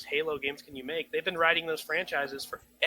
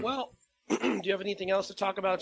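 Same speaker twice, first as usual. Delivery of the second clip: failing, spent voice running out; 4 semitones higher than usual. Asking the other speaker for more topics, voice running out. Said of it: "my voice is running out".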